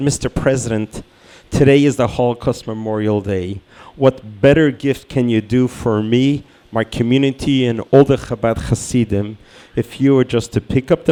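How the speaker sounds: ordinary talk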